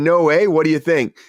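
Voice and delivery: ordinary delivery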